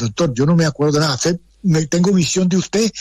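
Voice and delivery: ordinary delivery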